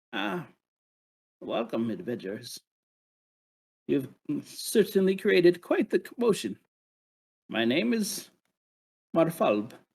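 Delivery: tiny, small little creature character voice. Narrating for the adventurers, voicing a character who greets them, in a small little voice. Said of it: "you hear this little voice".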